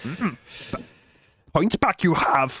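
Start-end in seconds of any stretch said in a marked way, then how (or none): 1.5-2.6 put-on little alien voice. Doing an impression for the others, Yoda impression. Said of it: "Was that Yoda?".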